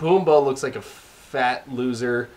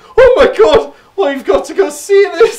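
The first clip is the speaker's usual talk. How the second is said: very loud, very high-pitched thrilled excitement; 11 dB louder than usual. Quoting a movie's main character talking to his best friend: imitating excited exclaiming. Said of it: "Just how excited he gets, like".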